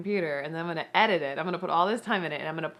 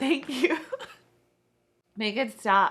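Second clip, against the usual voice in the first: teary voice holding back tears, higher; 7 semitones higher than usual. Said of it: "I can't do it".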